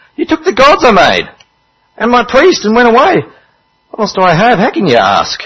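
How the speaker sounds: high, loud, swooping, sing-song whine. Reading a Bible story aloud, a man whose gods were taken replies: whiny tone. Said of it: "In a whiny tone".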